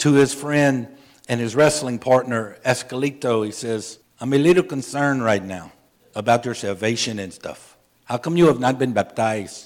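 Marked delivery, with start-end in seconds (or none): 4.2-9.7 put-on fast, rattled-off speech in a Spanish accent.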